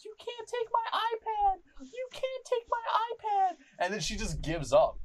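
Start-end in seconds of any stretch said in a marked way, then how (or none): 0.0-3.6 put-on shrill, high, slow little-girl tantrum scream. Retelling a little girl's tantrum when her mom threatens the iPad: imitating a little girl screaming. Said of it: "the little girl starts screaming".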